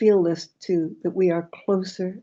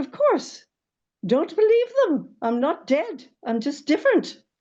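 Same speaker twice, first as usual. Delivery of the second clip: put-on elderly woman's Irish accent, very high-pitched; 10 semitones higher than usual. Retelling what her grandmother told her, the speaker quotes her in irish accent. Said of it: "she said in her Irish accent".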